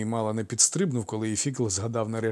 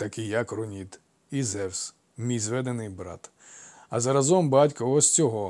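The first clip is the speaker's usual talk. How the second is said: ordinary delivery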